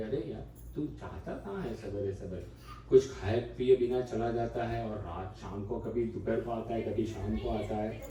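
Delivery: plain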